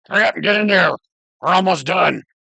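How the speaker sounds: loud, high-pitched hollering in a character voice. Voicing a giant calling back to a friend: shouting in character. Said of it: "he shouts back again and says".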